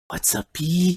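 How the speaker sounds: quiet, curious whispering. Voicing a character who leans over to a player and asks: whispering. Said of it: "whispers over to you".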